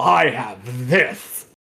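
low, slow lisp. Quoting a famous game line from Barry, with that lisp. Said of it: "He says it with that lisp".

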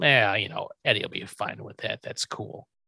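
low, soft, dismissive voice.

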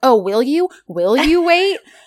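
snide, needling sarcasm, high and loud. Retelling a drama scene's exchange: imitating a salty sarcastic reply. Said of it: "they're both clearly being, uh, salty".

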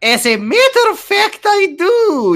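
slow, very high put-on Russian accent. Reading a story aloud, voicing a shop woman: Russian accent. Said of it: "in a Mary, Maria Mancini-ass Russian accent".

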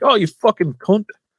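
put-on English accent, shrill, squeaky, high-pitched. Telling friends how an actor really talks, imitating him: put-on English accent. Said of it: "when I see him talking like".

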